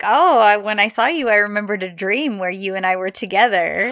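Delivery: ordinary delivery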